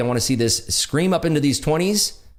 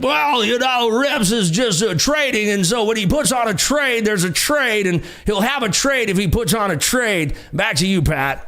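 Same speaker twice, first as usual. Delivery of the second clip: sports commentator impression; 9 semitones higher than usual. Answering the play-by-play as the colour commentator: John Madden impression. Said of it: "that's my best John Madden right there".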